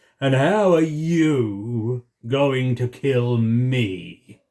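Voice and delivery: storybook dragon voice with me drawn out. Narrator reading a story, giving the dragon's reply to Peter; dragon's voice. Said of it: "said the dragon".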